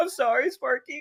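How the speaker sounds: very high, weepy, tearful, sobbing voice. Retelling what a waitress said coming to the table, imitating someone crying. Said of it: "like crying and stuff".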